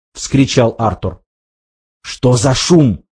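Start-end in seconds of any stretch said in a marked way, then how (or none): 2.0-3.0 hissed, spoken in a hiss. Ford reacts right after Arthur cries out, hissed. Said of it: "прошипел Форд".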